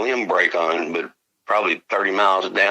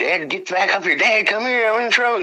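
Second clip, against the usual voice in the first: mock very high, urgent calling-out holler; 13 semitones higher than usual. Retelling a son calling from a tree for help: imitating son hollering. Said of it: "he started hollering at me".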